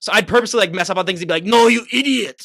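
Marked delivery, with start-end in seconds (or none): 1.4-2.4 put-on shouted in Austrian accent. Imagining messing up on purpose to get yelled at: Arnold yelling in Austrian accent. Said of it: "to hear him yell in his Austrian accent".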